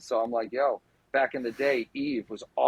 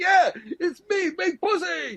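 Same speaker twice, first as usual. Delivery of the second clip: put-on, high-pitched, slow words spoken through laughter. Retelling what the man next to them said: imitating a man laughing while talking. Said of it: "the guy next to us is laughing like".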